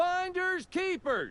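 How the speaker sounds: loudest possible shout, pitched very high. Telling how they marked a claim, quoting their own call: calling out in loudest voice. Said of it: "called out in my loudest voice".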